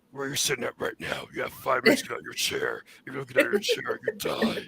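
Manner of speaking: breathy voice sliding into a puppet monster voice. Doing a voice the other speaker likens to a puppet, slightly Cookie Monster voice. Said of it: "You're kind of falling into Cookie Monster a little bit".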